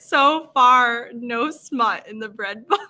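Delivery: words broken up by laughter throughout. Speaking to viewers, still laughing at their own mix-up, laughing while talking. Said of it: "I'm still laughing".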